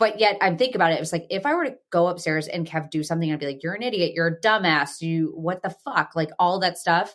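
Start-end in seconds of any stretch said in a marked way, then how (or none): none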